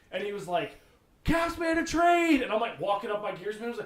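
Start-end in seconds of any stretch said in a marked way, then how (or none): 1.2-2.4 very high, very loud shout. Retelling a call from across the rink: imitating Dan yelling. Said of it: "Dan yells at me from the rink".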